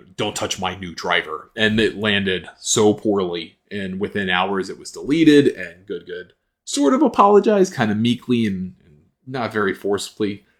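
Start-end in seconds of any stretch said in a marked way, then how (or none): 0.2-1.5 put-on threatening tone, much quieter. Retelling what someone said standing over her, imitating a threatening voice. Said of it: "it was a threatening voice".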